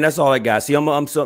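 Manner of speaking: loud fired-up burst.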